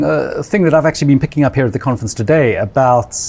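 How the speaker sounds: ordinary talk, nothing marked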